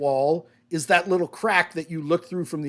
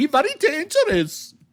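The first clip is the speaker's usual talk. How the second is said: put-on, very high German woman's voice and accent; 11 semitones higher, 4 dB louder than usual. After saying they can do it, the speaker performs a German female voice. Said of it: "I can do a very good German female voice".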